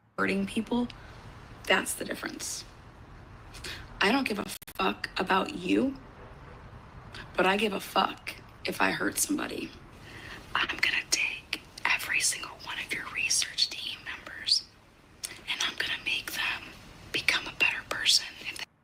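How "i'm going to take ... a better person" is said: hushed whisper. In a played clip, a woman speaks to someone about their research team, whispered. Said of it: "That's that's not creepy to whisper and say".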